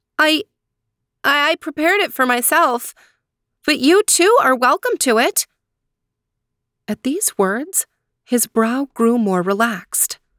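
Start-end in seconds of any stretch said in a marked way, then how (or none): 0.2-5.5 halting, bewildered, confused stammer, pitched up. A girl answers a stranger asking whom the food is for, stuttering, confused. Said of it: "Somewhat confused, she stuttered".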